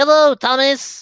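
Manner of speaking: put-on very high-pitched cartoon-like character voice. Asked about funny character voices, doing a Percy voice. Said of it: "do a Percy voice".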